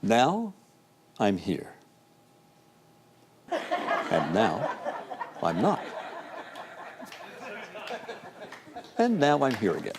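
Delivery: soft deity voice with swooping pitch. Asked by the host whether he has one, the guest performs his God impression. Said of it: "do you have an impersonation of God?".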